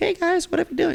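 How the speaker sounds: put-on very high, squeaky, super high-pitched kid voice. Describing being the skinny kid in class, imitating own past high-pitched voice. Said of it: "I was super high pitch".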